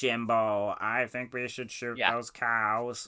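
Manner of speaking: imitated electronic voice box sound. Recalling a film scene with a voice box character: Ned from South Park voice box voice. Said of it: "a Ned in South Park style voice change".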